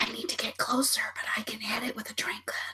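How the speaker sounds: very quiet whisper, barely voiced. Whispering to the group in character about moving closer: whispering. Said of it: "I'm gonna whisper to the group".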